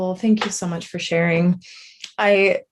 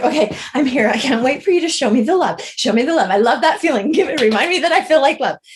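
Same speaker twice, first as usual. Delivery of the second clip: put-on eager rush of excitement, fast and high; 6 semitones higher, 4 dB louder than usual. Retelling own words at the start of a journey: retelling own excited words. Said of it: "I was so excited and I was like".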